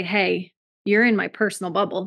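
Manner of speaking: plain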